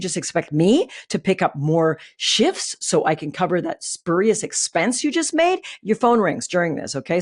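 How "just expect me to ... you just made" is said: ordinary talk, nothing marked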